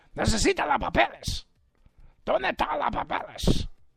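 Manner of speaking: rough, high, raspy, ranting radio-host voice. Demanding the release of the documents, switch into a Puerto Rican Alex Jones voice. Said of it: "Got me sounding like the Puerto Rican freaking Alex Jones".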